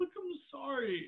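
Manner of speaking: very quiet, hushed, tearful voice through crying. Told what his actions left behind, he answers, crying while apologizing. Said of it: "don't cry".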